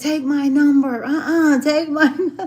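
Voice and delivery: high, loud scream. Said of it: "He was screaming that as I walked off".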